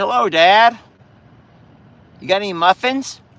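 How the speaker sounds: high-pitched animal voice. Speaking for Chucky as he comes over: voicing Chucky. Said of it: "He's like".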